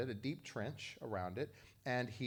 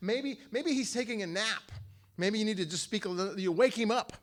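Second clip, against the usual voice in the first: mock sarcastic, loud, high jeering taunt; 9 semitones higher, 8 dB louder than usual. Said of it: "And he's making fun of them".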